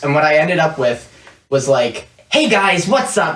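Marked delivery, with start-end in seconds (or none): 2.3-3.4 every word punched, excited. Showing the stereotypical intro voice that was attempted: really excited, emphasizing every sentence. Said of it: "really excited and, and emphasizing every sentence mm-hmm. type voice".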